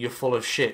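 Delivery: ordinary delivery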